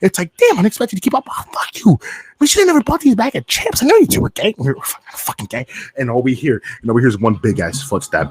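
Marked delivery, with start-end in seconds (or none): 0.4-4.5 mock whispering angrily.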